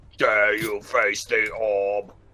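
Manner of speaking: deep, flat robotic monotone, low, level and slow. Voicing an enemy orb in a game: deep-throated Dalek voice. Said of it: "I imagine it talking like some kind of deep-throated Dalek".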